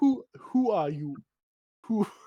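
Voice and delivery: high, crying-sounding character voice, near tears. Losing the Killiger voice mid-scene, sounding like crying. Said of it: "sound like you're crying".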